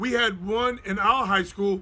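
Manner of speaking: normal talking voice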